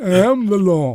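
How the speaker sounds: very loud, high, hard lawman-style proclamation bellow. Joking about modifying a prop: Judge Dredd impression. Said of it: "that's my Judge Dredd impression".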